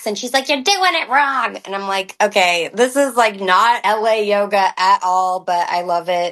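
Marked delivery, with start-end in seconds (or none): 0.5-1.6 screaming, shrill put-on voice in Long Island accent. Acting out a yoga teacher correcting people in class, in a Janine voice, screaming Long Island accent. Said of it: "screaming at people in her Long Island accent".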